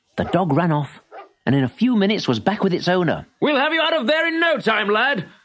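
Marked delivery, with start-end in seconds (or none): 3.4-5.3 very high, raised shout. A man peers down into the quarry at the boy below, shouting. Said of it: "shouted the man".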